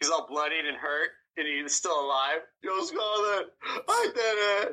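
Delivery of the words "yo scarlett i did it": high, very slow, drawn-out yell. Imagining the bloodied character after the mission: imitating Rocky Balboa yelling. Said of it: "I can just imagine him yelling out".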